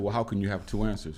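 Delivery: ordinary delivery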